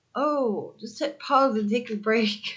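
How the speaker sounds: put-on dopey, dumb-sounding voice. Acting out the voice of the speaker's inner saboteur, dumb inner-saboteur voice. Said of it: "That's a dumb voice".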